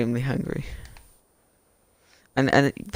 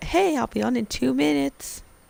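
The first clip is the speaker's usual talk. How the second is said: high-pitched, squeaky mock voice. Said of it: "He's like".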